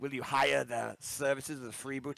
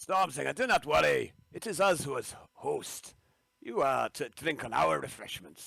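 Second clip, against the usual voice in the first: shoddy, badly done fake Scottish accent. Role-playing a host reassuring a guest, in a bad scottish accent. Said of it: "my Scottish accent is fucking shite tonight".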